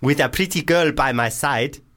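high mock South African accent. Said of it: "is this going full African?".

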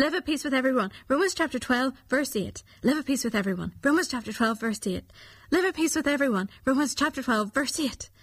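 rapid-fire. Leading listeners in saying a verse three times without stopping, very fast. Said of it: "Let's try saying the verse very quickly, three times without stopping".

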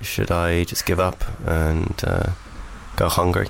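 low, bored voice. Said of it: "So just bored".

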